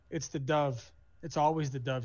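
plain

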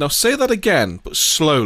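normal talking voice

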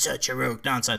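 put-on robot villain voice. Retelling how an actor repeated a movie line: Megatron voice. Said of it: "he even did it in the Megatron voice".

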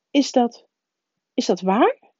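stuttered, faltering, halting, stammering words. Professor Anderling reacts to news about Harry Potter: stammering. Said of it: "Hakkelde professor Anderling".

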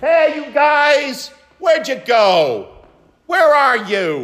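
put-on loud, high little boy's yell. Retelling a four-year-old boy calling out in a store, retelling a child's yell. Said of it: "he kept yelling to that someone special".

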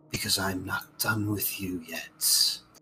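thin, airy voice. Narrating a story as the skeletal-winged figure speaks, in a wispy voice. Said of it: "And in a wispy voice".

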